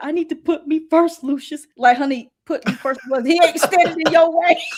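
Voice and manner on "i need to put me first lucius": high, drawn-out, tearful sobbing. Retelling what a crying girl on the show said: imitating someone crying. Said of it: "she was doing all that crying".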